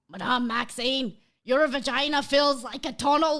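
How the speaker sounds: put-on Scottish accent. Reading a line of dialogue from a book aloud: Hagrid Scottish accent. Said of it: "let's test out my Scottish accent".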